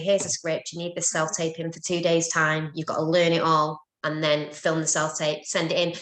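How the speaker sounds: ordinary talk, nothing marked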